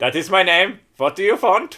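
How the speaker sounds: bad fake German accent. Imitating the other speaker's mum answering when called: put-on German accent. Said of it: "at least your interpretation of German".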